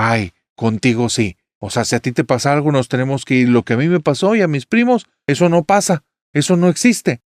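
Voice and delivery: put-on, irritated, angry tone, rising. Speaker acts out her reply to someone who wants to leave, retelling an angry retort. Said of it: "yo me enojo y le digo".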